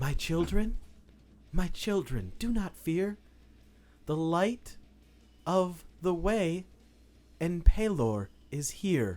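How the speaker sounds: soft, calming put-on voice. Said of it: "this gentle, soothing voice".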